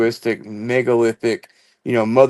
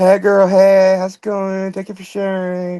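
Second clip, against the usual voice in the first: put-on friendly voice, pitched higher; 8 semitones higher than usual. Acting out what Lisa will say to Faith: imitating Lisa. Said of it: "she'll be like".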